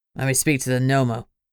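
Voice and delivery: gruff commanding tone. A caller demands to speak to the Nomo on the phone, gruff voice ordering. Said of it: "a gruff voice ordered".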